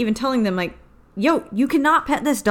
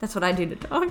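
ordinary delivery

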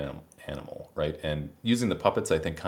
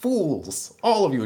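shrill, very high, loud jeering shout; 12 semitones higher, 7 dB louder than usual. A player retells a puppet animal berating the players, retelling a puppet's yell. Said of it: "this guy just starts yelling like".

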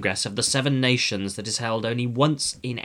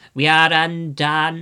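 groaning, higher, louder, much slower; 5 semitones higher, 6 dB louder than usual. Narrator reads the Prime Minister's reaction: groaning. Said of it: "groaned the Prime Minister".

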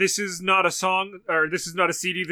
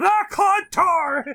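piercing, very high-pitched, shrill yell; 12 semitones higher, 4 dB louder than usual. Retelling a clip of Gilbert Gottfried: imitating Gilbert Gottfried yelling.

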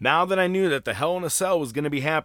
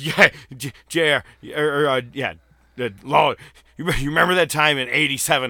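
put-on sloppy, meandering, rambling drunk voice. Retelling Hawk's drunk commentary: imitating drunk Hawk. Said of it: "He sounds like every fucking drunk".

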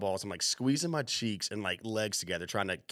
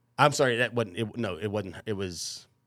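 ordinary talk

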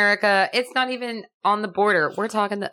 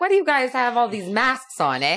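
put-on alien voice speaking with Cockney accent; 3 semitones higher than usual. Imagining aliens arriving with cockney accents, the speaker voices them, cockney alien voice. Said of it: "had a Cockney accent".

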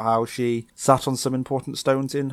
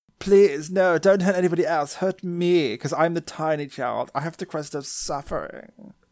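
put-on refined girl voice, higher pitch; 5 semitones higher than usual. Acting out a scene as Kari, pleading to be hurt instead: sophisticated voice as Kari. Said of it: "Why is she so sophisticated now?".

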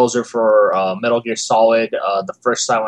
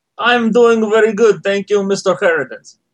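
put-on Russian accent, much higher, louder; 10 semitones higher, 4 dB louder than usual. A podcast guest answering the host's greeting, in a russian accent. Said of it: "That sounds awesome in a Russian accent".

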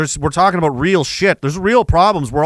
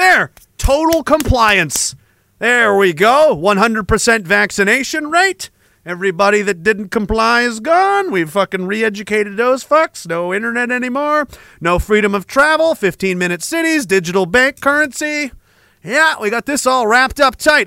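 boastful, sarcastic gloating, pitched up; 5 semitones higher than usual. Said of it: "I'm being sarcastic".

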